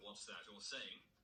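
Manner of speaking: normal talking voice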